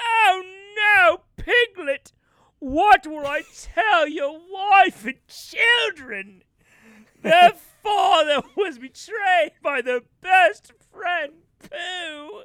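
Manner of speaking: overblown, over-the-top, theatrical dramatic lament. Narrating a pooh and piglet scene, acting out a mock over-the-top dramatic reaction. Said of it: "he'll completely over-exaggerate his whole reaction".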